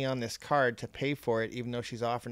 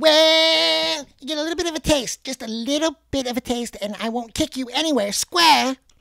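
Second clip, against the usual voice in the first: put-on very high, loud cartoon kid voice, stretched then belted; 14 semitones higher, 10 dB louder than usual. Asked to do the South Park voice for listeners; Eric Cartman voice. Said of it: "Can you do the South Park voice".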